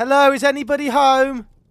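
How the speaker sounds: very high, loud, desperate calling out. Calling out in an empty cabin for anyone there: desperate cry for attention. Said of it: "very desperate cry out to".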